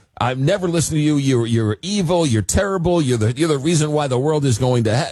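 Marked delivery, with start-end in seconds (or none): none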